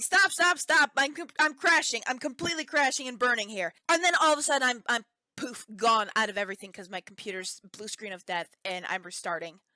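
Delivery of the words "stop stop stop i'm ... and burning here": loud, repeated mock hollering. Retelling a computer crash mid-video, retelling a yell. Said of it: "I'm yelling".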